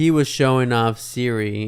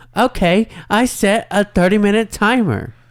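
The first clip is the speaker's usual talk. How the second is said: put-on voice-assistant voice, higher and louder; 9 semitones higher, 5 dB louder than usual. Retelling a timer being set, imitating Siri's voice. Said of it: "Is that the voice?".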